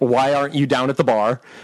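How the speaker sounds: ordinary talk, nothing marked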